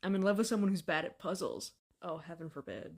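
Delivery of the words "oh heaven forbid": sardonic, sarcastic, throwaway tone. Reacting to hearing they love someone bad at puzzles, sarcastic. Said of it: "Was that sarcasm?".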